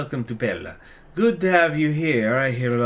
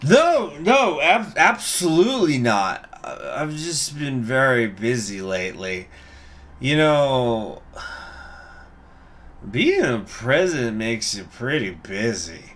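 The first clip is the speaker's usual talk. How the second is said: put-on tipsy, boozy speech. Asked if he is making fun of someone, the president replies as Mister Alvarez in a drunk voice. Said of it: "I'm just gonna go with a drunk voice".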